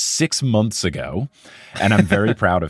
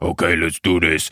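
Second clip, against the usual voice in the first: big, put-on comic-book character voice; 3 semitones lower than usual. Retelling a costumed player's press conference opening: Hulk voice. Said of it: "He started with Hulk voice".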